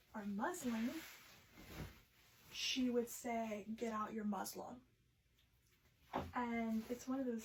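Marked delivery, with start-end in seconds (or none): 3.8-4.7 put-on heavy Russian accent, quieter. Retelling how a sewing professor asked for muslin: imitating a heavy Russian accent. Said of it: "she had a very heavy accent".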